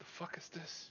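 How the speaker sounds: slow, barely heard mutter. Describing their reaction, the speaker shows a remark muttered under breath. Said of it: "slow like under my breath".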